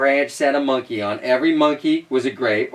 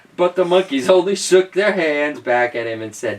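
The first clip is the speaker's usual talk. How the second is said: usual speaking voice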